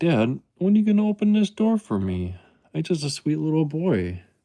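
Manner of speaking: cutesy cat voice. Speaking as the cat behind the door, in a put-on cat voice. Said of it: "He's like".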